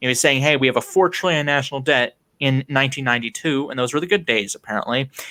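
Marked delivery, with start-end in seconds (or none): none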